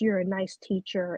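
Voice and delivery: normal talking voice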